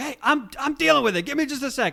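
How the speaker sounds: shouting in a very high voice. Retelling an anime scene where Okuyasu blocks Josuke: imitating Okuyasu yelling. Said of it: "Okuyasu turns and yells".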